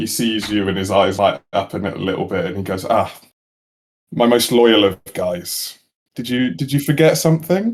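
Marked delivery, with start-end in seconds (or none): 2.8-7.7 playful, amused, having fun with it. Voicing a character who greets the listener's character, amused and having fun. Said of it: "having a certain level of fun with this".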